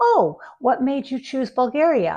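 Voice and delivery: genuinely curious, interested, engaged tone. Showing the better way to ask why someone chose a country, in an interested tone. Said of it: "in a kind of interested tone of voice".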